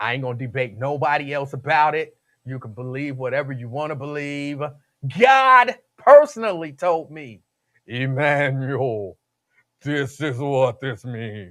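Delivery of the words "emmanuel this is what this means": put-on deep, slow, quavering voice. Imagining god speaking to him directly: imitating god's shaky deep voice. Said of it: "I don't know why God sounds like that".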